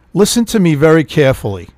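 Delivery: ordinary delivery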